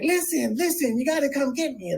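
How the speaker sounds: play-acted, very high, shrill yelling. Retelling a hospital roommate on the phone to his family: imitating someone yelling. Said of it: "yelling to his family".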